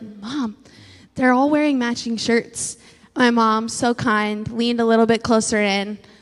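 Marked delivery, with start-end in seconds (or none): 0.0-2.8 confiding, hushed stage whisper. Retelling a remark to mom at a restaurant: retelling a half-whisper. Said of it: "and I whispered".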